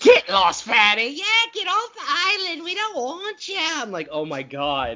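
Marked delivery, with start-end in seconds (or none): 0.0-3.6 put-on girl's voice, Bronx accent, pitched very high. Acting out a woman turning on a man who refused her, in a bronx girl voice. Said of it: "she becomes like every Bronx girl in the world".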